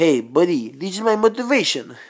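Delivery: put-on Eastern European accent. Speaker addressing viewers after telling of a trip: Borat voice. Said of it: "I'm doing Borat voices".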